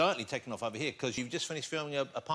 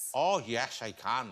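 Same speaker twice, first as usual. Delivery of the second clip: imitated Northern Irish accent; 2 semitones lower than usual. Answering whether one can do accents: put-on Northern Irish accent. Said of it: "that's the Northern Ireland".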